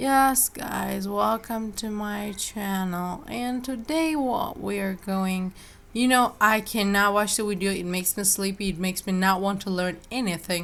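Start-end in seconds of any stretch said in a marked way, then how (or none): 0.0-5.5 very slow, sluggish, drawn-out delivery. Mocking a tutorial video host who speaks too slowly: imitating a very slow talker. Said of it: "the guy is speaking so slow".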